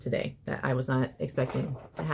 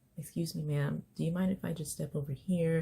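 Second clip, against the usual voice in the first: gentlest tone, soft and hushed; 2 semitones higher, 5 dB quieter than usual. Acting out a biker-looking stranger offering help: imitating the gentlest voice. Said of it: "the gentlest of voice".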